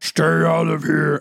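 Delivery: dragged-out, rough delivery. Joking about the west wing, the speaker does a horrible Beast impression. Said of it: "That was a horrible Beast".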